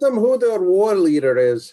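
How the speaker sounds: high, carrying shout as if across a distance. Playing a character, the speaker yells over a hill: yelling over a hill. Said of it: "I'm yelling over the hill".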